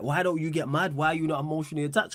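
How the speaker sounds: ordinary talk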